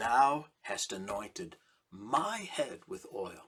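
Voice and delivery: my stressed firmly and hard. Reading a psalm verse out loud, with stress on my. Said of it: "I emphasize the word my".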